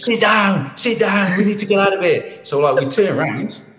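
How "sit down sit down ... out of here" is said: mock screaming, high and urgent. Retelling the captain's warning when surrounded by crocs: imitating a captain shouting. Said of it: "the captain starts shouting, screaming".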